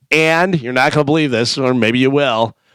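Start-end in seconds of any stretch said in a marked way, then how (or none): none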